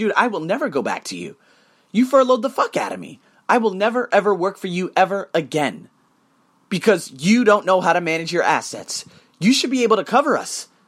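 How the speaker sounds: ordinary delivery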